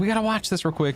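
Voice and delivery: put-on excited child voice. Retelling how Isaac called for attention: imitating Isaac excited. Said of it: "he's very excited about it".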